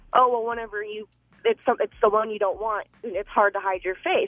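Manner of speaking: ordinary delivery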